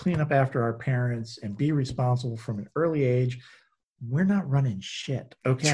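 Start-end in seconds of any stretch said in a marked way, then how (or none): none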